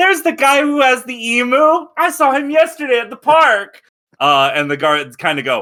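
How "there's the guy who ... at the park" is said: put-on very high, tattling little-kid voice. Voicing a child pointing out a player to the guards: voicing a child pointing. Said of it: "the kid points at you and goes".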